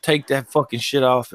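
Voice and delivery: ordinary delivery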